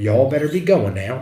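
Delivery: Southern US drawl, stretched out. Telling of a woman who floated past, the speaker repeats her words in a southern drawl. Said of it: "Like in a southern drawl".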